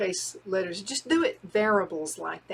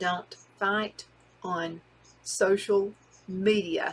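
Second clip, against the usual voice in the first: very slow, deliberate, every word spelled out. Giving numbered tips to the audience, said really slow. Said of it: "I said that like really slow".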